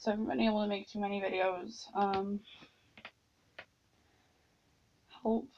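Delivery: hoarse, strained, sore-sounding voice. Apologizing to viewers for few videos, hoarse, sore voice. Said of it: "my voice is killing me".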